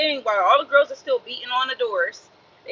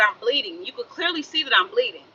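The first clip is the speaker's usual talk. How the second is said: ordinary delivery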